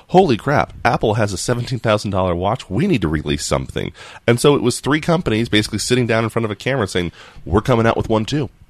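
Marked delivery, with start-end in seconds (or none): none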